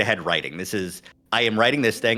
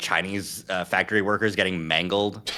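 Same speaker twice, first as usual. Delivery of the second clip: ordinary talk, nothing marked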